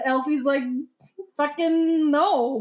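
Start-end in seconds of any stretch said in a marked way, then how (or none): none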